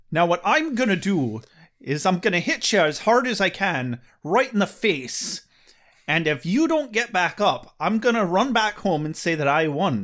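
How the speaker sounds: slipping into a put-on Irish accent. Making up a fisticuffs threat on the spot, in a put-on irish accent. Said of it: "I'm just falling into an Irish accent".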